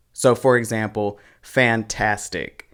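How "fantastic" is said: fantastic with second syllable tas stressed. Speaker explaining word stress with an example, stress on TAS in fantastic. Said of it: "The stress falls on the second syllable".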